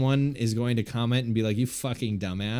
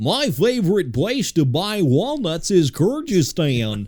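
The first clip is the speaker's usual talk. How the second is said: big, loud, sing-song delivery; 7 semitones higher, 7 dB louder than usual. Showing they can say words by talking like Goofy, the speaker uses a Goofy voice. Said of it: "if I talk like Goofy".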